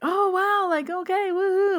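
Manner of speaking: very high, drawn-out, all-excited whoop. Retelling a friend's reaction to a psychic prediction: imitating an excited friend. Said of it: "all excited".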